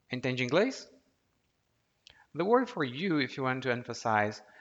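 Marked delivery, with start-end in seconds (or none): 0.1-0.8 rising pitch at the end of inglês. Showing how to turn a phrase into a question: rising pitch on inglês. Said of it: "this is a question, you just raise your intonation".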